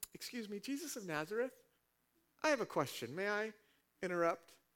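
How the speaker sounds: overly courteous little interjection. Explaining the passage, contrasting the demons' yell with a mock-polite interruption. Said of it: "This wasn't a silent disruption".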